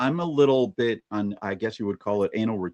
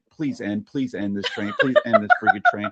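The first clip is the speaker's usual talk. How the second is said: mock pleading, swooping and sing-song, repeated. Retelling waiting for a train to end before a raid: retelling own pleading. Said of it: "I'm just sitting there going like".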